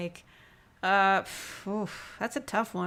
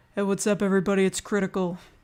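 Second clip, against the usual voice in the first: loud, raised, calling-out voice; 6 dB louder than usual. Showing how an attempted impression opened his videos: Moist Critical impression. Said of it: "I did attempt to do an impression of him".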